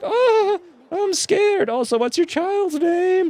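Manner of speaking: very high elf voice, fake frightened. Playing an elf character and pretending to be scared, in an elf voice. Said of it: "That's my elf voice".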